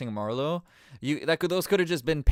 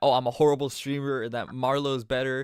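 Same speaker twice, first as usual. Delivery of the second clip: ordinary talk, nothing marked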